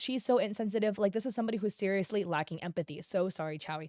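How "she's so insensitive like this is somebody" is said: plain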